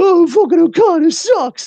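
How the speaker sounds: put-on shrill, very high, loud sobbing whine. Gloating about how the internet will react when Okada wins, mock crying. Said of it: "internet's gonna be crying and be like".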